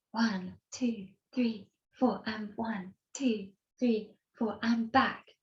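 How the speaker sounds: hushed whispering. Showing how they count when practicing outside: imitating own whispered counting. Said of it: "I whisper and I'll go".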